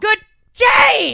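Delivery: very loud, shrill, angry screaming. Recalling Gene Wilder tricking Charlie at the end, the speaker retells Gene Wilder's yell. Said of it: "please don't yell directly into the mic".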